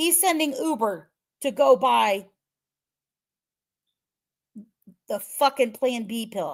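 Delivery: heated, fuming, angry outburst. Recounting a criminal case, the speaker gets mad. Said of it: "Sorry, I'm getting mad".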